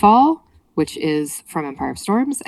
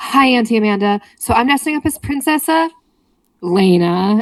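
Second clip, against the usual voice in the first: put-on high little-girl voice, breath mid-word, one word stretched; 5 semitones higher than usual. Retelling her niece's video message from about age six, imitating a six-year-old niece. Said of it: "takes a breath in the middle of the word".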